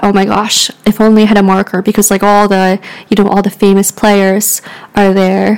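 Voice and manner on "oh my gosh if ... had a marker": normal talking voice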